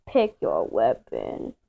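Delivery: whispered, breathy, sinister evil villain voice. Starting a first person shooter video with a brother: evil voice. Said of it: "I'm just gonna say an evil voice".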